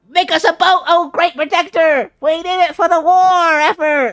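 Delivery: shrill, very high, very loud tiny-ant voice. Voicing the ants while putting down tokens in a game: ant voice. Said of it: "Every time you do the voice".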